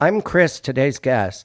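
careful, proper, very formal delivery. Guest introducing themselves at the start of the podcast, monotone. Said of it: "I went you with also, monotone".

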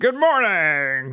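badly done, put-on puppety cartoon voice. Showing a poor impression that sounds like a Muppet: bad Tim Cook impression. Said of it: "Mine sounds like a Muppet".

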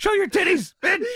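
crude, very high-pitched jeering yell. Retelling a heckle yelled at a wrestling show: imitating Lawler yelling. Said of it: "That was Lawler yelling it".

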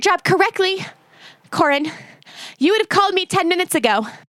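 out of breath. Speaking to Corin about calling ten minutes ago, winded. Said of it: "Why do you sound winded?".

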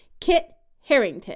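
a beat of pause after the first word. Saying the name Kit Harington with a second beat: pause after Kit. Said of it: "you pause for that second beat after Kit".

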